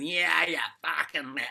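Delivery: put-on loud, high-pitched drunk voice. Describing the inner critic as a pub drunk: imitating a drunk at the pub. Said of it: "Bob's like the drunk that comes in at the pub and goes".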